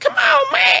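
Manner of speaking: very high-pitched, begging, pleading voice. Retelling meeting a man known from YouTube: imitating his plea for a dollar. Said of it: "he's like".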